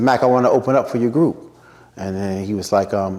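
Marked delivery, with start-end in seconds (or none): none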